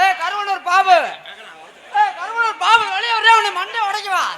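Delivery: loud, challenging, defiant call.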